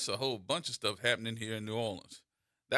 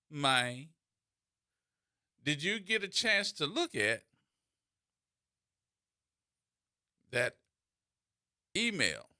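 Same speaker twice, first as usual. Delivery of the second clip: put-on rural country-style accent; 4 semitones higher than usual. Retelling a man calling out to the speaker near a building: country voice. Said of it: "he said it in the country voice".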